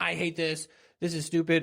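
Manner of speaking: whining, whiny younger brother voice. Speaker retells how younger brother Jesse would come in; imitating Jesse's whine. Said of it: "such a whiny voice".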